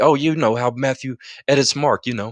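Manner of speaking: mock offhand, breezy, casual, nonchalant tone. Imitating a man who just said this line: imitating a nonchalant remark. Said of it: "that man just said this nonchalantly".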